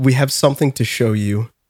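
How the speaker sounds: somber voice. Retelling what an uncle and mom said at a burial: imitating a somber tone. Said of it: "they looked very somber".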